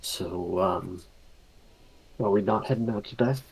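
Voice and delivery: hushed, whispering voice. Entering the room and answering Sonder quietly: whispering. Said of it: "Whisper back to Sonder".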